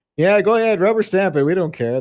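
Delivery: mocking brush-off tone. Mocking a call to pass bills quickly: sarcastically channeling Dan Patrick. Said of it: "I'm doing it sarcastically".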